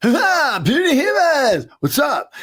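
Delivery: very high, swooping, drawn-out surfer dude drawl. Recalling a voice actor's first audition for an alien role: Rob's surfer dude voice. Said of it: "did like the surfer dude".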